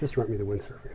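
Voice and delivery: normal talking voice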